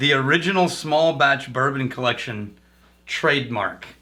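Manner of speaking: normal talking voice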